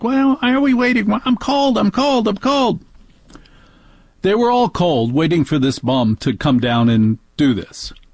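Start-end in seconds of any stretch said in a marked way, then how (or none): 0.0-2.8 shrill, very high-pitched yell. Parent retells the daughter complaining while waiting, imitating a daughter yelling. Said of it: "my daughter's yelling".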